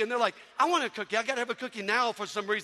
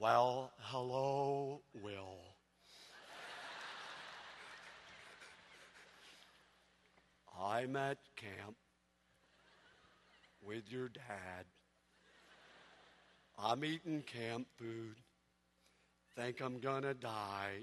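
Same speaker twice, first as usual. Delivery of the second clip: very slow, hushed, soft, dragging, drawn-out voice; 12 semitones lower, 14 dB quieter than usual. Retelling a phone call, doing the voice of Eeyore: Eeyore voice.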